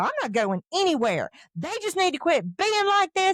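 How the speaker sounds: acted, fast, rising snap with words rattled off. Recounting her own reply when asked a question, retelling her own snapping. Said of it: "I'm just like snapping".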